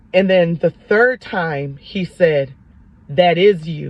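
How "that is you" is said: put-on powerful commanding voice, lower. Retelling the voice speaking a third time: imitating God's powerful voice. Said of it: "it was even more powerful when he said it".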